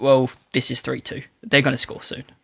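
ordinary talk

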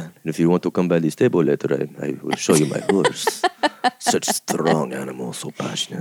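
smooth Spanish-accented voice. Asked to show their polo player voice, doing an Antonio Banderas-style polo player. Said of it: "It's very Antonio Banderas".

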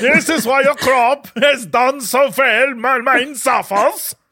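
best-effort put-on Swedish accent. In an acted scene, delivering a line in a Swedish accent. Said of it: "in his best Swedish accent".

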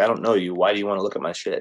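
plain

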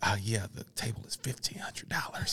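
hushed whisper under the breath. Retelling a sales call made secretly from a work cubicle: imitating own whisper. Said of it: "I'm whispering".

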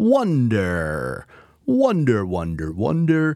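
silly, drawn-out voice, very slow. Opening an ad for irrigation professionals, grabbing their attention in a funny voice. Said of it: "I'm talking in this funny voice".

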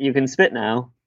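plain

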